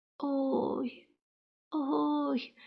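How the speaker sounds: very quiet, faint, barely audible groaning moan. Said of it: "ледь чутно простогнав дракон".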